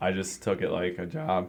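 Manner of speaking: soft voice, cracking and breaking partway through. Speaker talking with another speaker about bowling, voice cracking. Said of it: "that voice crack".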